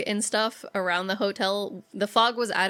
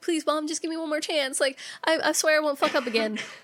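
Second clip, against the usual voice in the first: put-on high, begging voice like a freshly scolded child; 7 semitones higher than usual. Retelling a film scene as a scolded child: imitating a berated child pleading. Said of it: "he sounds like a child who just got berated".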